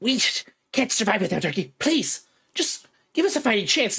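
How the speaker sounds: high, small chittering creature voice. Game master voicing a pleading Formian to the players: little chittering voice. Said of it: "the little chittering voice".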